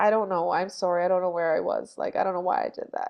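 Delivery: put-on embarrassed woman's voice. Retelling a woman's reply in a later interview, imitating an embarrassed woman. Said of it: "she was just like so embarrassed".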